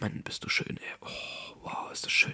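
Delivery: quiet murmur, half aloud. Speaker retells stroking each part of his bike and talking to it, murmured half-aloud. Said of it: "wirklich so halblaut von mir her gesagt".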